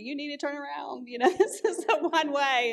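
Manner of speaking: put-on high-pitched screaming. Retelling how a woman screamed at the speaker for driving the wrong way, retelling a scream. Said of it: "she's screaming at me".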